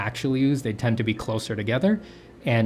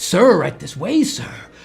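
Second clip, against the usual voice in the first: raised, high, fawning and overly deferential voice; 6 semitones higher, 6 dB louder than usual. Voicing an Italian character in a story: imitating an obsequious servant. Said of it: "just kind of do like an obsequious servant kind of a coding in my voice".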